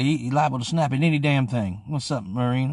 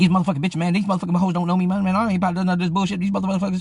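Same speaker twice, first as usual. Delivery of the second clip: put-on furious, angry rant, higher pitch; 6 semitones higher than usual. Retelling how the pacing friend ranted: imitating Kato's angry rant. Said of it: "He's just angry".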